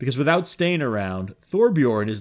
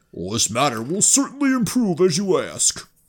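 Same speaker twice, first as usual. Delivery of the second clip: high, sentimental character voice, sounding deeply moved; 5 semitones higher than usual. The narrator relays Thorbjorn's reply to the player: Thorbjorn voice. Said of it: "We're right back to the voices".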